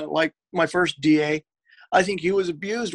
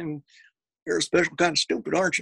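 put-on Texas accent. Retelling a remark from a story, put-on Texas accent. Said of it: "kind of put on that Texas accent".

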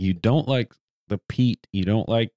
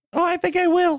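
very high put-on girl voice. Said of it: "that's a fantastic impersonation".

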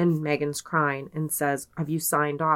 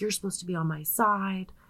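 light, put-on yelling; 4 semitones higher, 3 dB quieter than usual. Retelling how she started yelling at her mom: imitating someone yelling. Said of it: "she starts yelling at her mom".

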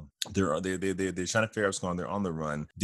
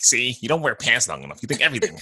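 loud, high, swooping, sing-song villain voice; 5 semitones higher, 6 dB louder than usual. Retelling a Comic-Con scene with He-Man and Skeletor: Skeletor voice. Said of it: "And his Skeletor voice".

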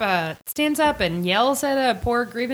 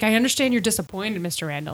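ordinary delivery

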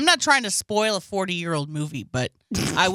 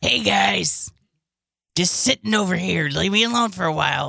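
rough, slow borrowed voice. Pretending the other speaker is still alive, imitating the other speaker's voice. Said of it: "I could do your voice".

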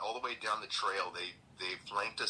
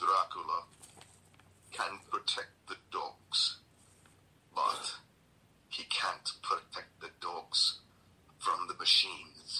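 put-on thick Transylvanian accent; 2 semitones lower than usual. Quoting an old lady you met at a lodge, thick Transylvanian accent. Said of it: "with a very thick accent".

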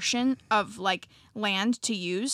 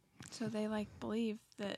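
much softer, toned-down talk. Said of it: "she was talking quieter".

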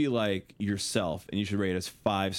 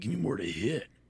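hyped wrestling ring-intro announcer promo voice. Joking about hitting buttons on the channel: Macho Man Randy Savage voice. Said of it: "my Randy Macho Man Savage voice".

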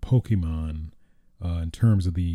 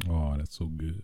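usual speaking voice

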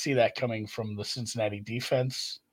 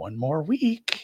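put-on whisper; 3 semitones higher than usual. Retelling a tweet where the old office guy whispers to Jim: imitating a whisper. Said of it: "just whispers".

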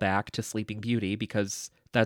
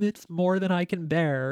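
slow, high, drawn-out drawl dripping with sarcasm; 8 semitones higher than usual. Quoting a movie scene where Maleficent answers Aurora: imitating sarcastic Maleficent. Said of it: "you can tell she's being sarcastic".

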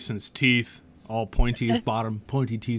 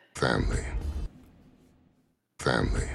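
put-on gruff orc voice, lower pitch; 11 semitones lower, 3 dB quieter than usual. Voicing an orc character who turns and answers: Vin Diesel orc voice. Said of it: "He looks at you and he's like".

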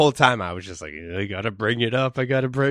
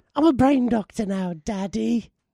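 put-on very high, piping little British boy voice; 13 semitones higher than usual. Recapping Frasier's move to Boston, the speaker voices Frasier like a little British boy. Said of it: "he sounds like a little british boy".

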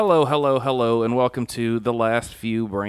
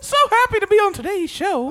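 put-on cartoon mouse voice impression; 5 dB louder than usual. Joking about a guest coming on the show: Mickey Mouse voice. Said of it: "if you just came in here and Mickey Mouse".

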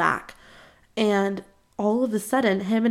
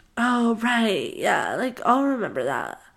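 slow, drawn-out, swooping, odd sing-song drawl. Retelling what a guy said after a date: imitating how he talked. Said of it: "He literally talked like this".

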